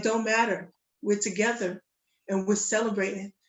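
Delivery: ordinary delivery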